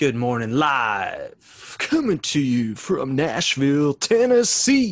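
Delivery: loud, swooping morning radio announcer voice. Joking about doing the show live, a podcaster opens in a radio announcer voice. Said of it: "Did I sound like a radio voice there?".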